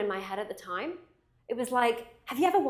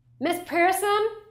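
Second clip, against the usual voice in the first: put-on American accent, raised and high pitch; 7 semitones higher, 5 dB louder than usual. Recalling hearing someone call out a name: American accent. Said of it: "that's my American accent".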